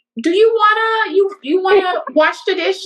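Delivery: very high-pitched, commanding tone. Describing how the speaker's grandmother asks for chores; mimicking her commanding question. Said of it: "she will say it in a way where it's like".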